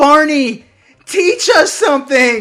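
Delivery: loud yelling. Retelling how they reacted to a kids' episode: retelling screaming at the screen. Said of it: "I'm screaming at the screen".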